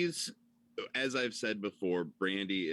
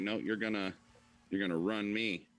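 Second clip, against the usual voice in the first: ordinary talk, nothing marked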